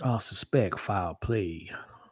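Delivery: put-on, thick Kentucky southern accent. Doing an impression for viewers: Daniel Craig's Kentucky Fried CSI accent. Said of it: "Daniel Craig's Kentucky Fried C S I accent".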